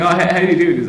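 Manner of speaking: ordinary talk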